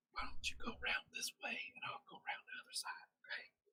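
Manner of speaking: very quiet, scheming, barely audible whisper. Acting out a character sneaking at the village edge: whispering. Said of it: "start whispering to each other".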